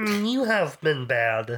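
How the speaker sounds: muppet-style frog puppet character voice. Among several speakers taking turns doing voices: Kermit the Frog voice. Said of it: "I didn't know Kermit was in the movie".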